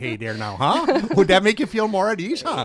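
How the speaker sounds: put-on Minnesota accent. Raised in northern minnesota, the speaker proposes doing the whole show in a minnesota accent. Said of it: "Let's do the whole show in that accent".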